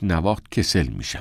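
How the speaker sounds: ordinary delivery, nothing marked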